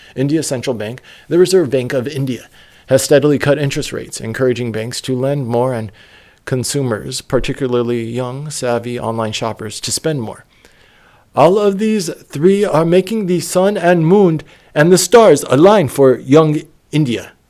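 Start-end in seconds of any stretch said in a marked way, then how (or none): 11.4-17.3 put-on, vaguely British accent, pitched up. Reading a quoted line from an article aloud: vaguely british put-on accent. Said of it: "What was that accent?".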